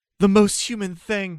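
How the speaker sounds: crying, tearful, very high-pitched shout. Voicing a character shouting over their armored ally: tearful shout. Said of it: "I tearfully shout".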